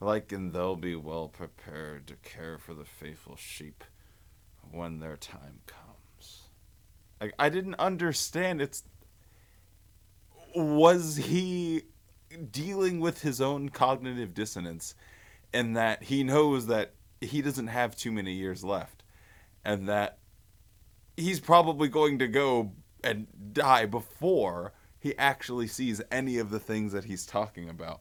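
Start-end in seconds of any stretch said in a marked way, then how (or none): 0.3-6.5 low, soft, begrudging, reluctant tone. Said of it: "reluctance, sort of maybe begrudgingly saying something".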